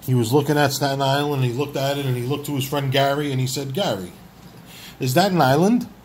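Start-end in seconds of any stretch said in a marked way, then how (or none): 3.7-5.8 put-on thick, heavy, laid-on Italian accent. Telling a joke story of Christopher Columbus speaking to his friend: Christopher Columbus heavy Italian accent. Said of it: "He has a heavy Italian accent".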